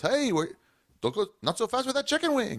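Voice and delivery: put-on pitched way up in old-school comic style. Telling how Mark Normand eats off people's plates at the Comedy Cellar, failed Mark Normand impression.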